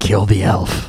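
hushed whisper. Narrating a game, a figure whispers a command to a player, whispering. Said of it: "he whispers to you".

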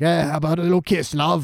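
taunting street thug voice. Retelling how the thugs cornered Gilly: imitating a thug. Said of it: "thugs have cornered, uh, Gilly and are all like".

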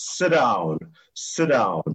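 acted loud booming shout. Retelling how the man who backed the business shouted out, retelling a big shout. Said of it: "he shouts out in this big voice".

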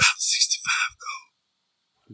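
soft whisper under the breath. Voicing a character who quietly tells another the door's worth: whispering. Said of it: "looks over to Var and whispers".

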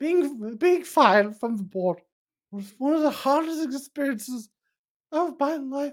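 pretend misty-eyed. Playing someone fired from the board, thanking those who helped: mock tearful. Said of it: "I'm getting a little bit misty-eyed".

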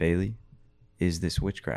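quiet, small, still little voice. Retelling a voice heard asking a question: small, still voice. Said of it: "hearing this small, still voice saying".

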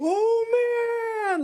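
shouting out loudly. Retelling what a man blurted out at 4 a.m. as he sat down: super loud exclamation. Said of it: "like super loud".

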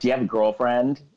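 ordinary talk

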